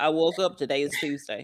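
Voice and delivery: flat, emotionless, uncaring monotone. Imitating a character who doesn't care about anything: imitating a flat uncaring voice. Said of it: "that's how he sounded".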